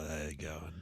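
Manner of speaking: very quiet, hushed voice. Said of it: "he's always like".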